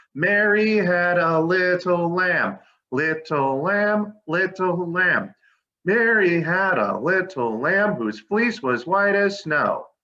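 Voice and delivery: big, full, really loud, slow talking voice. Showing the class how to say the rhyme really loud: really loud. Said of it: "let's be really loud".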